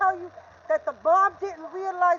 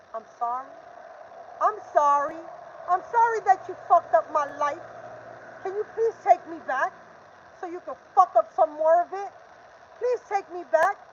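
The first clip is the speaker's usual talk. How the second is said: sarcastic, mocking, begging plea tone. Mocking how they want you to come back and apologize: mocking imitation of a begging apology. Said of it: "And then they want you to come back".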